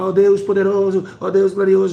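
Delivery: very loud, high-pitched shouting delivery. Imitating pastors kneeling behind the altar, imitating pastors shouting prayers. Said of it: "gritando, gritando, gritando".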